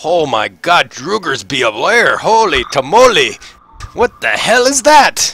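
put-on Scottish accent, loud, swooping, exclaimed. Narrating a scene, voicing a character who spots Carl beside Razik, in a Scottish accent. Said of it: "He's turned Scottish too".

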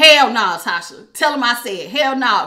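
furious, mad-as-hell angry tone. Voicing Aquarius refusing a third party: imitating being mad as hell. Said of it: "y'all still mad as hell".

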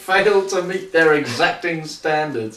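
plain

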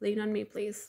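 usual speaking voice

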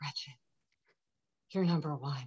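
soft, hushed whisper.

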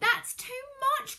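shrill, loud, high-pitched outcry. Narrator reads the boy as the porridge pot keeps overflowing, cried out. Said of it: "cried the boy".

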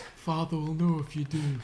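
stern fantasy-hero voice. Playing a game, one player quotes a line in a Jon Snow impression. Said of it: "That's my best Jon Snow impression".

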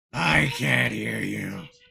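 threatening voice. A player on a stream tells the others he can't hear them, menacing. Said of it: "You said it menacingly".

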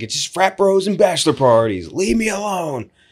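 put-on high, old-fashioned vaudeville stage man voice. Retelling a comedy sketch, imitating the old-timey stage guy. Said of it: "he's like".

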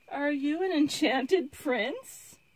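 hesitant, skeptical, doubtful, high and slow. Zimmerine, meeting a talking frog for the first time, a little doubtful. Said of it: "She asked a little doubtfully".

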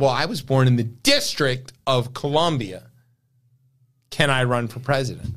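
ordinary talk, nothing marked

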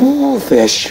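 high, loud, startled gasping shriek.

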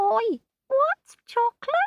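tiny, muffled, very high-pitched squeaky creature voice. Reading a story, a crocodile zipped in a pocket calls out, a muffled squeak. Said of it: "Came a muffled squeak".

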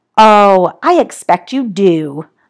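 very slow, indifferent, bored drawl. Keeping her frog and answering her request to give it back: bored drawl. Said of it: "drawled Snotty in a bored voice".

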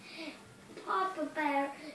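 ordinary delivery

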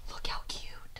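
soft, hushed whisper.

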